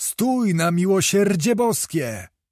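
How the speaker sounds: high, menacing cry with a begging, pleading tremor. Narrator reads a man's cry as he runs after a rider, shouting, threatening yet pleading. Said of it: "krzyczeć głosem, w którym obok groźby drgała i prośba".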